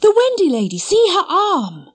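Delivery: very high exclamation, cried out. Narrator reading Nibs, who has looked at Wendy: crying out. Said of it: "he cried".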